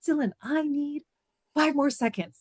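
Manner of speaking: mock high scream. Retelling screaming back at dylan before the sunset: retelling own scream. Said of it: "I'm screaming at Dylan".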